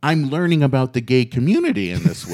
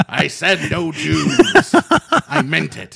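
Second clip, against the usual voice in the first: very slow, rough, creaky, drawn-out put-on growl; 3 semitones higher than usual. Imagining Walt Disney very mad in the ground, Walt Disney impression. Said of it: "That's what I think Walt Disney sounds like".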